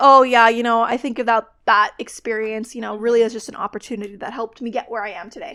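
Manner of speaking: plain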